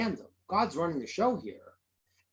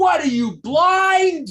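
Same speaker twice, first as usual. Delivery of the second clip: ear-splitting, very loud, shrill, high, drawn-out scream; 12 semitones higher, 11 dB louder than usual. Retelling a story of a man pushed on the subway: imitating a scream. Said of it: "screams out".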